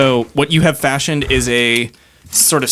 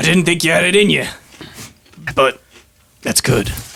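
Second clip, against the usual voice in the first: put-on Scottish accent slipping into South African; 3 semitones higher than usual. Voicing Seamus praising a plan, accent slipping South African. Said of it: "he went South African for a minute".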